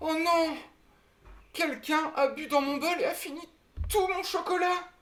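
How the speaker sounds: put-on tiny, very high baby-bear voice, cried out. A storyteller voices Bébé Ours crying out, in a tiny voice. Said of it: "d'une toute petite voix".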